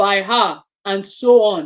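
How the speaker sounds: ordinary delivery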